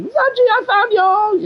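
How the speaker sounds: very high-pitched, slow, drawn-out pirate drawl. Show how a hilarious-sounding game character talks, in a Zaji voice, Jack Sparrow of the Khajiit. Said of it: "the fucking Jack Sparrow of the Khajiit".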